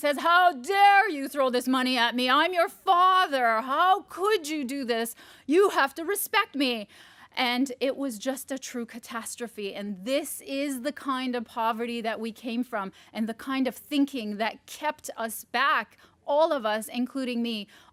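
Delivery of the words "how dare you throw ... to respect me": flabbergasted, furious, booming roaring outburst. Retelling how the father reacted when money was thrown at him: imitating a father roaring. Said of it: "he roars".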